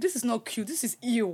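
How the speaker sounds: ordinary delivery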